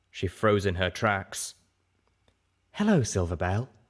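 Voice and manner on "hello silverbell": tender, soothing, gentle, kind. Greeting someone who froze on recognising her, said gently. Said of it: "Velvet Remedy said gently".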